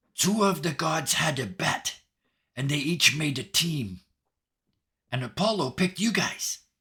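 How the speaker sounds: exaggerated, loud, theatrical stage whisper. Storyteller voicing a woman who looks around before telling the group, stage whisper. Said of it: "she looks around and she stage whispers".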